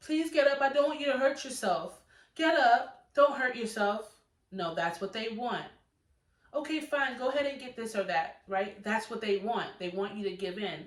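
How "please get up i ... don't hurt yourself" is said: loud, high-pitched, pleading, begging tone. Advising parents, the speaker acts out a parent imitating a begging parent. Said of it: "then you're begging your child to get up".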